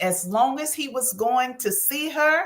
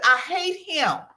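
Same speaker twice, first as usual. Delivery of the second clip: mock-angry delivery; 4 semitones higher than usual. Retelling what a woman who reached out said to her, retelling an angry woman. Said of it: "I could just hear the anger in her".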